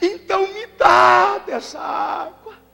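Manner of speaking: high, slow, sobbing, crying shout.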